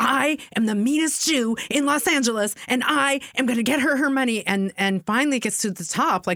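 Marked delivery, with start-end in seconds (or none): 0.0-4.4 high-pitched yelling. Retelling how a friend yelled at a company on the phone: imitating someone yelling. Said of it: "he's yelling at them".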